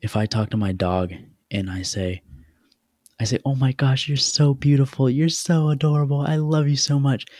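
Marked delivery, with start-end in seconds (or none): 3.4-7.2 cheerful, excited gushing, bright and pitched up. Showing how talking to a dog sounds, in a happy tone. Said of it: "Because I have a happy tone".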